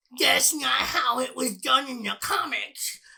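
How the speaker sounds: high, slow, drawn-out put-on voice. Mocking older comic fans' complaints, sounding like King Kai. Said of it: "Why did you sound like King Kai?".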